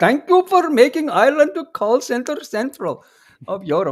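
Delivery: put-on Indian accent. Mock thank-you to Simon over Ireland's call centers: Indian accent. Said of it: "that's an Indian accent".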